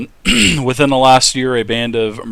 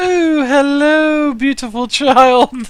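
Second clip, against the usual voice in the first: put-on very high, slow, drawn-out old lady voice; 4 dB louder than usual. Imitating a Dragon Age character who sounds like a grandmother: Mrs. Doubtfire grandmother voice. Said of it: "the grandmother from Missus Doubtfire".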